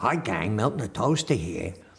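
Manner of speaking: put-on slight New York accent. Show how you voiced a toaster character greeting the gang: Milton the Toaster voice, a little New York. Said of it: "a little New York".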